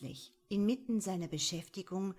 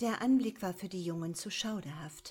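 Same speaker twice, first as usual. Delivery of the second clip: plain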